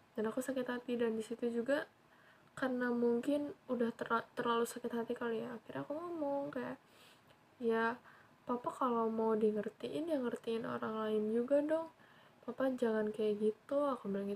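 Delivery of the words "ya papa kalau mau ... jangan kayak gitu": ordinary talk, nothing marked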